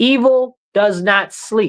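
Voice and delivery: slow, deliberate, each word drawn out with weight. Repeating a warning to the crowd because people are not getting it, said real slowly. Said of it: "let me say that again real slowly".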